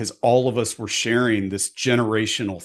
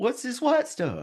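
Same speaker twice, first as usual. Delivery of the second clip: put-on very high little-kid, toddler voice; 14 semitones higher, 4 dB quieter than usual. Retelling an old snow photo from age three: imitating himself as a three-year-old. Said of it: "I like your impression of how you".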